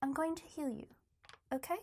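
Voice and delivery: hushed, close, soft leaned-in whisper. Whispering to a wounded character in a game scene: whispering to her. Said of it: "I'm gonna lean in and whisper to her".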